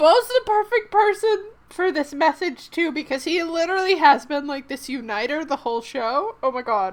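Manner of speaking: speaking through tears. Speaker still crying after reading a moving message: crying while speaking. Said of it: "It sounds so bad when I cry".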